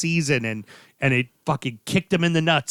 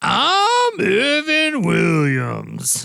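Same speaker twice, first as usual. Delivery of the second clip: put-on high, creaky drunk voice, drawn-out swinging "I'm"; 6 semitones higher, 3 dB louder than usual. Asked by another speaker to do the voice, in Evan Williams character voice. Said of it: "Do the voice".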